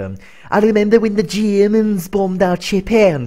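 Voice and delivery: put-on Liverpool Scouse accent. Recounting friends doing scouse accents, giving their own version: scouse accent. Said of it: "My one is always".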